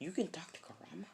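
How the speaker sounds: soft, unvoiced, surprised whisper.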